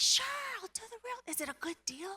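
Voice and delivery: hushed stage whisper, under the breath. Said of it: "I'm whispering to Grant".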